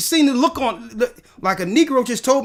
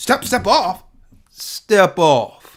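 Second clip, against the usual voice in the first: mock-threatening, menacing, intimidating acted-out tone; 5 semitones lower than usual. Speaker retells confronting a maskless man, retelling a menacing warning. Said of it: "Put the fear of God in this man".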